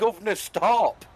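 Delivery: very loud, shrill, high shout. Retelling what was shouted while being pushed down the hill: retelling own shout. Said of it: "I shouted".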